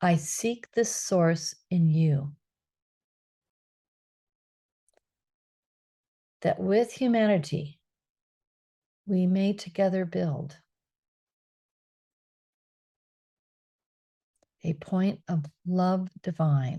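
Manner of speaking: slow, unhurried delivery. Speaker repeats the loving-kindness phrase one more time, slowly. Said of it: "I'll say it slowly".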